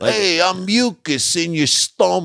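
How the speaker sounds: put-on New York accent. Recalling an old bit about talking things in commercials, put-on New York accent. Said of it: "they always would give it like a New York accent".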